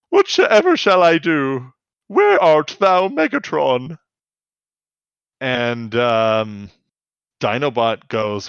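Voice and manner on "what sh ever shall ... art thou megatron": put-on cowering scared voice, higher and louder. Retelling a scene where Dino Clone cowers: imitating Dino Clone cowering. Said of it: "cowers, and he's like".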